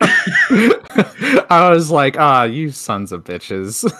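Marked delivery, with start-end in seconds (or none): 2.2-3.8 mock annoyed, pissed-off angry outburst. Retelling own reaction to losing a game online: imitating own angry outburst. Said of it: "I was pretty pissed off".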